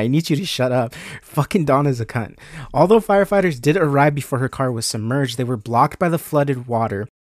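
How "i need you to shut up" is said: ordinary talk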